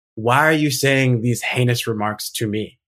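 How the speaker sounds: usual speaking voice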